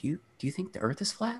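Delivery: very high, soft, hushed half-whisper. Retelling the wife's question on a flight: imitating a half-whisper. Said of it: "she whispered to me".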